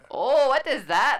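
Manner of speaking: fake Spanish-accented voice.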